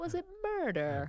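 soft, hushed, pitch swooping way up. Describing how Keith Morrison says his line: Keith Morrison impression, voice rising. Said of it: "his voice goes up like 5 octaves".

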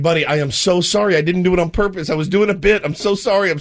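acted frantic, panicked tone. Retelling what he said to his weeping buddy: retelling a panicked apology. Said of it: "So I'm panicked".

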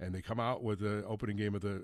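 ordinary delivery

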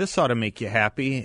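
ordinary delivery

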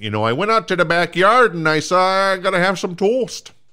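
good, very high, loud Minnesota accent. A self-described Minnesota boy showing off his Minnesota accent. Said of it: "I got a good Minnesota accent".

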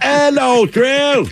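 put-on English accent.

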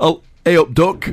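not-so-good Yorkshire accent. Asked how Yorkshire sounds, you admit you're not good at it: attempted Yorkshire accent. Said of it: "I'm not very good at Yorkshire".

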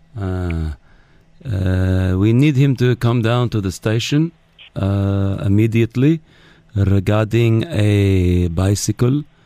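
halting, put-on Dubai accent. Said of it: "this is, uh, security, uh, Ahmed Al-Wawari".

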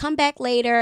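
ordinary talk

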